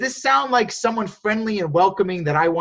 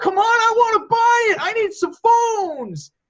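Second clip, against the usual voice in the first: acted, very high, slow, desperate begging scream; 4 dB louder than usual. Teaching about buying phones, acting out a desperate buyer, imitating a desperate yell. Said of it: "You're like screaming at people now".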